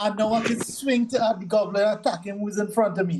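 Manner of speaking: ordinary talk, nothing marked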